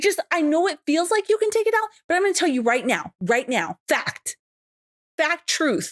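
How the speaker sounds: high, fast, frantic pleading.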